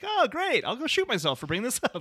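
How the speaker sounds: sarcastic, very high, swooping voice. Quoting a favorite joke from Homer: sarcastic Homer impression. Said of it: "Just the way he says it is very like".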